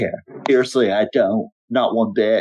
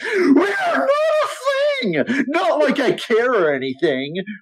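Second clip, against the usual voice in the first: very high, swooping, shrieking screech. Narrating a game, voice a character screeching her reply to the player. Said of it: "As she screeches".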